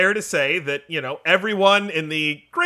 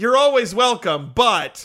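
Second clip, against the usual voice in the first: put-on sarcastic tone; 3 semitones higher than usual. Retelling what Debbie said after an unannounced visit: imitating Debbie's sarcastic tone. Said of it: "it was a very sarcastic, like".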